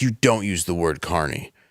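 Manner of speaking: put-on angry, furious woman's voice. Retelling what a furious carny woman said: imitating an angry woman. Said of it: "more angry than I think I've ever seen anybody".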